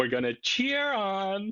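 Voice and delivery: camp, very high-pitched, drawn-out voice. Imitating a speech clip just played, camp Trump impression. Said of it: "his best sort of camp impression".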